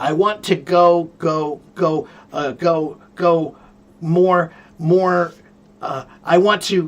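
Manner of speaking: halting, slow stammer on repeated whole words. Explaining the difference between stuttering and stammering, demonstrating word stammering. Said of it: "That's stammering".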